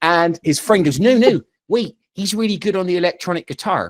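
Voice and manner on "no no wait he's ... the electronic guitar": put-on strong, heavy Bristol accent. Retelling what kids said while about to bully him: strong Bristolian accent. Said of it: "there's a very strong Bristolian accent there".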